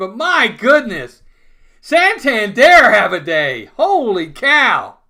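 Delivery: excited screaming. Calling Santander's home run for the Orioles, screaming with excitement. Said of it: "Sorry if I'm screaming".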